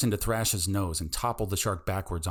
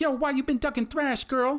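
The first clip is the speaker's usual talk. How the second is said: shrill, whiny, very high-pitched whine. Reading a story: a fish peering up from the toilet taunts her, whiny and high-pitched. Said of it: "in a whiny, high-pitched voice taunted".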